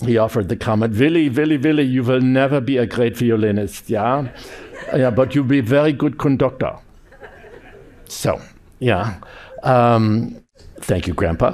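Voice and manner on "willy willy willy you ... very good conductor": put-on strong, heavy Austrian accent, faster pace. Quoting his grandpa's comment to him, in a strong Austrian accent. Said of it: "in his very strong Austrian accent".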